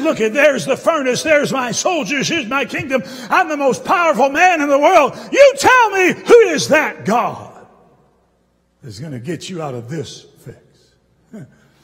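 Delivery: play-acted, contemptuous, scornful sneer with swooping pitch. Retelling a man's taunt from the story: mock-scornful sneer. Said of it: "I hear the scorn in his voice as he said".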